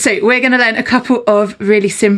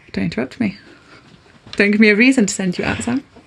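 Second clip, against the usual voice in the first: normal talking voice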